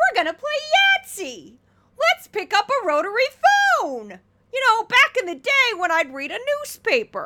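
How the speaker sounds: mocking, very high, loud and swooping. Mocking a TV host's old-fashioned talk: Steve Doocy impression. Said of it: "That's my Steve Doocy impression".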